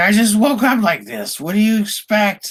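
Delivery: very high, frantic, panicked screaming. Voicing a vampire who is freaking out in the sun: screaming in panic. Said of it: "And she's screaming".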